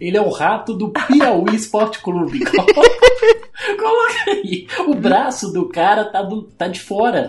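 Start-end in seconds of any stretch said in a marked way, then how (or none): 0.0-4.7 very high voice breaking up laughing through words. Laughing at a team mascot named Enxuga, the speaker keeps laughing while speaking. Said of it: "Eu tô rindo".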